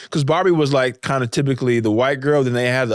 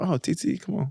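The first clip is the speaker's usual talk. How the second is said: put-on soft, gentle old lady grandma voice; 6 semitones higher, 8 dB quieter than usual.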